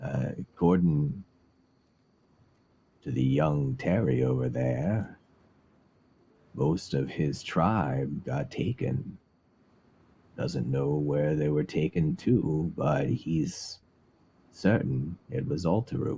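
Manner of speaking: put-on relaxed, laid-back, easygoing old man voice. An old man drinking at the bar answers the party's question, relaxed old man. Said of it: "And then the very relaxed old man at the other end of the bar. / and there's an old human who's drinking from their cup. They've finished their bowl, and they're just sort of like sitting back and rel".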